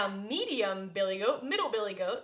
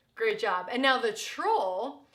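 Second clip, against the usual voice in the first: ordinary delivery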